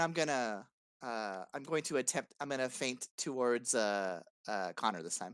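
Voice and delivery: ordinary talk, nothing marked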